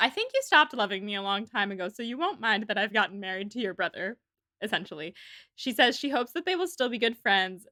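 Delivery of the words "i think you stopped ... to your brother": plain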